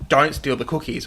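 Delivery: ordinary talk, nothing marked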